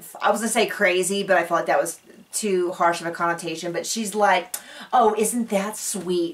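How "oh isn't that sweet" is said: put-on, slow, drawn-out, super condescending, patronizing tone. Retelling what Jenna said back, imitating a condescending tone. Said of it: "super condescending".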